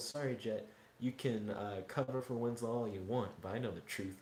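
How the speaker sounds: ordinary talk, nothing marked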